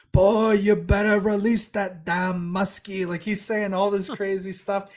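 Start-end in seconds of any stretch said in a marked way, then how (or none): 0.2-3.1 mock furious, slow, drawn-out angry yelling. Retelling a man yelling at them for releasing the muskies, imitating an angry yell. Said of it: "he's like starts yelling at us".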